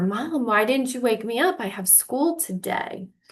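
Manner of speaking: put-on fearful voice. Retelling waking up late and asking her mom, acting out past fear. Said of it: "I could feel the fear in me".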